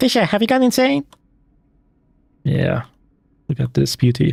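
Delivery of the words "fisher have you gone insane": very high, squeaky chipmunk voice. Imagining the actual Lambert talking to Fisher, Lambert in a chipmunk voice. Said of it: "he had the chipmunk voice like".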